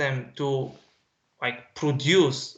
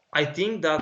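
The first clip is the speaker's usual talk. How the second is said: normal talking voice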